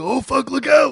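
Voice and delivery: very high-pitched, intense blurted outburst. Retelling own reaction while playing a game: Macho Man voice. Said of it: "I just do that voice where when things get intense".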